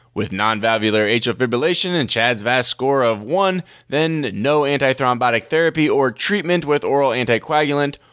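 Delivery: ordinary talk, nothing marked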